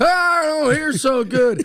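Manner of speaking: drawn-out, very high, very slow, loud yell. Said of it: "You're shouting".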